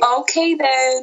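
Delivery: sarcastic voice. Answering a claim that their podcast is amateur: sarcastic tone. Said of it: "That was so sarcastic".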